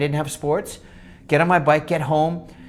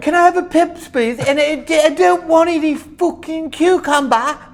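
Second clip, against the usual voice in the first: over-the-top fake British accent, very high; 12 semitones higher, 6 dB louder than usual. Speaker born in Cambridge doing a bit, in a bad British accent. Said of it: "That was just a bad accent".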